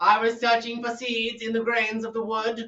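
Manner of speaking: very high-pitched bird voice. Asked to redo a bird character, the speaker does the high Timothy voice. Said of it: "was like a high".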